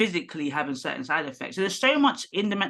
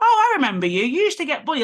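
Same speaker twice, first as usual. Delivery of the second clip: very high, loud, snide mocking sarcastic sing-song; 10 semitones higher, 7 dB louder than usual. Retelling what a doctor said during a visit: imitating a sarcastic doctor. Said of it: "he did it in a very sarcastic way".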